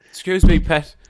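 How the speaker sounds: far too polite, over-polite voice, very loud. Imitating a car's voice warning the driver: mock overly polite car voice. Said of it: "ours would be far too polite".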